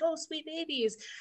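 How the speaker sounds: sweet, light, gentle tone. Imitating Gordon Ramsay talking sweetly to junior cooks: Gordon Ramsay sweet to kids. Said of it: "this is my second Gordon Ramsay".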